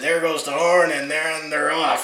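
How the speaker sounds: rough Western race-caller announcer voice. Imitating the famous chuckwagon race announcer's call: Joe Carberry rough Western voice. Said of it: "in that kinda rough Western voice there".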